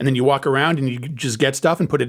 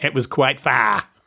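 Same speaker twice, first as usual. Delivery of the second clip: fake, put-on Australian accent. Repeating a sentence after being asked to say it like an Australian: fake Australian accent. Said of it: "Now say it like an Australian".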